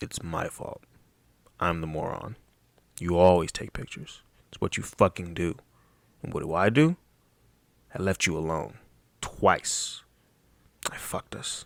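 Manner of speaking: low, quiet, rude tone, out of character. Reading a story aloud, voicing Bryce speaking to Bri in an unbecoming tone. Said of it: "Let me channel let me channel unbecoming of Bryce".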